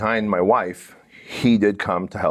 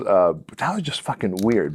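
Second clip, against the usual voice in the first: normal talking voice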